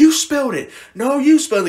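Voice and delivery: very high, very loud, shrill berating shriek. Retelling how parents accused their young child in a prank: imitating parents screaming. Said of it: "they're screaming at him".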